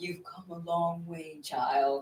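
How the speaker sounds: put-on elderly man's way of talking. Repeating a message heard in a vision: old man voice. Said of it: "It was in his voice, that, like, old man voice".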